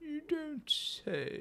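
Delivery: very hushed, very high-pitched bear voice. Correcting another speaker's take on a character's line; bear voice. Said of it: "that sounds more like a bear".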